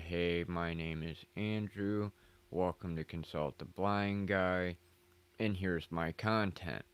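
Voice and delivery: mock low-energy monotone, flat and put-on. On a live stream, showing how his old intros sounded, imitating his low-energy monotone. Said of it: "the low energy, monotone".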